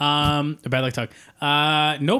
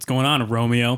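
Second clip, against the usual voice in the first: mock-scary, put-on voice; 4 semitones lower than usual. Recalling how an ex's dad greeted him when he walked in, imitating a scary dad. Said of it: "he'd be like".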